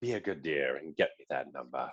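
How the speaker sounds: very low, sinister hushed voice. Showing how Anthony Hopkins asks for a number, in a sinister Hannibal Lecter voice. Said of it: "still kind of doing that sinister um".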